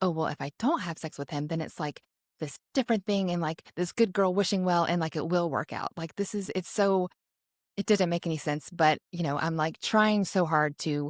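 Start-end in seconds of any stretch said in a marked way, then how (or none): none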